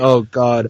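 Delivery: fake, mock sobbing, tearful crying through words. Imagining the cinematographer watching a bootleg copy: mock crying. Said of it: "That cinematographer is just crying and going".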